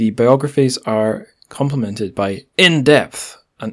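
heavily emphasized delivery. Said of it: "I'll do my bold text voice".

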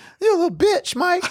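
mock very high voice, quivering throughout. Imagining threatening a boxer named Mike to his face: imitating a quivering voice. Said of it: "voice would be all quivering".

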